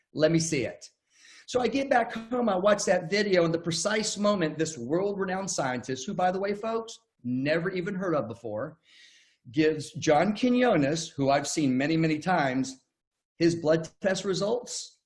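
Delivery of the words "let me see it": dry, sarcastic tone of disbelief. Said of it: "I said this sarcastically".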